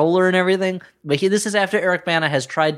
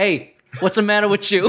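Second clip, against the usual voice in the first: put-on heavy New York accent; 5 semitones higher than usual. Recapping a movie, quoting Eric Bana's character in a heavy fake New York accent. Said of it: "super heavy, fakey New York accents".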